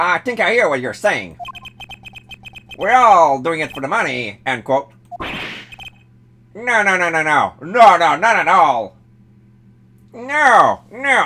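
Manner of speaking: attempted cartoon-hero character voice. Reading a game's dialogue aloud for the first guy: Inspector Gadget voice. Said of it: "I was trying to do an Inspector Gadget voice for the first guy".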